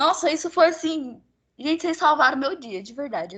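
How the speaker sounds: crying while speaking, tearful, deeply moved. Thanking people who saved the speaker's day, speaking while moved to tears. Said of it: "comovida, chorando aqui".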